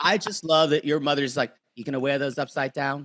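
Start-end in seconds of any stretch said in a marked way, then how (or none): 1.7-3.0 imitated Rhode Island accent. Imitating another speaker's mother: Rhode Island accent. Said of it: "completely in her Rhode Island accent".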